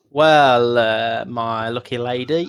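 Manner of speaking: very slow, smug, self-satisfied drawl. Voicing a character who won the gold pot, answering her: smug grin. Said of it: "with a big smug grin on his face".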